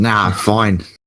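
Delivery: put-on abrupt switch into a strong Australian accent. Speaking in character after a fight: sudden australian accent. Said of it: "Why did your accent change".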